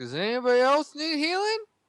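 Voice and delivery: put-on slurring speech. Voicing a dazed character just shaken awake: slurred words. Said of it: "I'm gonna slur my words and ask".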